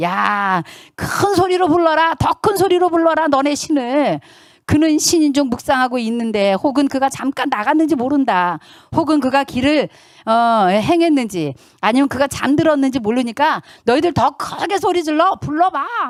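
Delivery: high, loud, mocking, taunting tone.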